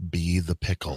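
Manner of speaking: very low, calm, hushed radio-host voice. Addressing everybody, the speaker slips back into NPR voice. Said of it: "go back to my N P R voice".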